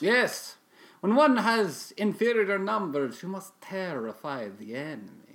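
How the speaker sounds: put-on speaking with Romanian accent. Guest answering the host's questions in an interview, Romanian accent. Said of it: "You have a very specific accent".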